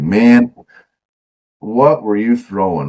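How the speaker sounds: super slow, each word stretched way out. Retelling what Brian asked after the fishing: imitating Brian talking super slow. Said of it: "you know how he talks super slow".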